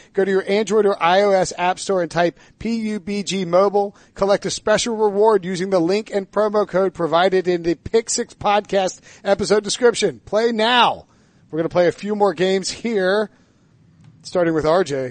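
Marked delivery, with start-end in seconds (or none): none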